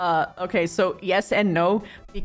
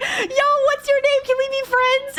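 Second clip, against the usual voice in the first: put-on very high, gushing, excited voice; 3 dB louder than usual. Acting out a character meeting the Hulk: imitating someone gushing excitedly.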